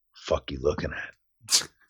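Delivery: calm, soft, slow, creepy drill-instructor whisper. Retelling a drill instructor who never yelled: imitating Breckenridge talking without yelling. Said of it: "he would just fucking roll up and be like".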